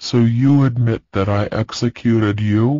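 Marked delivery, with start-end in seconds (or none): none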